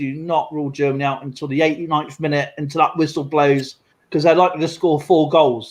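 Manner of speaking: normal talking voice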